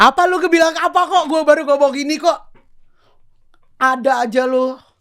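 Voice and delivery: flustered, very high, loud panicked outburst. Asked about something said earlier, speaker denies saying it, panicked. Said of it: "Kok lu panik sih?".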